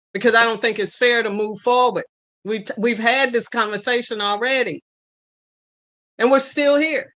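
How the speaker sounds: openly angry, pointed tone. Objecting during a commission discussion: angry. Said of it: "If I sound angry, I am".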